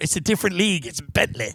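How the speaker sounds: put-on sad, mopey, downcast little British-accented voice. Retelling what the car dealer said to the speaker: imitating a sad british guy. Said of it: "This sad little British guy is like".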